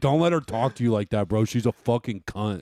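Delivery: put-on, angry, drunken ranting outburst. Retelling what they used to say while drunk: imitating own drunk angry rant. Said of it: "That's the type of shit I'd say on alcohol".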